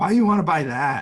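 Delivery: loud, high scowling disapproving voice. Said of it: "she, like, scowls at me".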